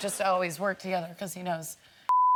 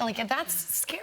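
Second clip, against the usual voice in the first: ordinary delivery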